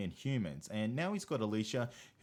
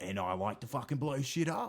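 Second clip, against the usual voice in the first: exaggerated, laid-on-thick Australian accent. Joining a mock bit about Aussies on American TV: exaggerated thick Aussie accent. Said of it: "I swear the accent is laid on thick".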